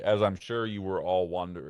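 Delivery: normal talking voice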